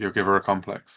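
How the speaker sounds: ordinary delivery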